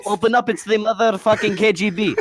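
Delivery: play-acted loud, high-pitched, rowdy yell. Retelling banging on doors at camp: imitating a yell. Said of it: "we bang on the door and yell".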